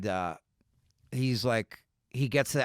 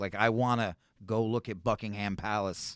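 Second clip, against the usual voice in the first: ordinary talk, nothing marked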